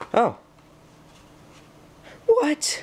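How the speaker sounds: loud, very high voice crack. Talking to viewers while opening something, a loud voice crack slips out. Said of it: "that was a loud voice crack".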